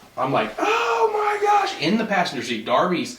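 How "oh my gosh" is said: sudden, shrill, high-pitched shriek of pain. Retelling biting into a hot slider in the passenger seat: retelling own scream. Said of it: "I'm screaming".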